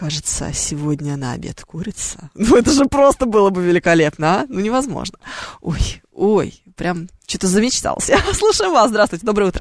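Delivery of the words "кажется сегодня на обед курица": soft, velvety movie-dub voice-actor voice. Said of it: "этим вот бархатным голосом".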